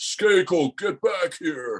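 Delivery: loud, carrying, very high-pitched booming voice. Speaker retells the Rams general manager calling him back, in a booming Don Klosterman voice. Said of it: "I hear this booming voice".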